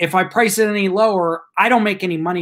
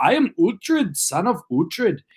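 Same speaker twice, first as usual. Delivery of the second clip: put-on English accent with a Danish accent mixed in. Quoting the main character of Last Kingdom, in Uhtred's Danish-English accent. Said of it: "He like tries to mix an English accent".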